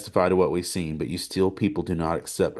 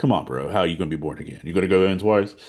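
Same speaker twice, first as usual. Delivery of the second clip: full of cheeky sass and attitude. Reading a questioner's line from scripture as a casual paraphrase: sassy. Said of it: "read that with some sass".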